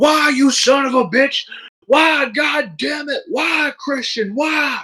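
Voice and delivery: high-pitched acted-out screaming. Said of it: "he's just screaming in the microphone".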